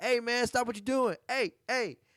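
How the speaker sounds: put-on very high, loud yell. Retelling how officers yelled at a man to stop: imitating officers yelling. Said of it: "they start yelling at him like".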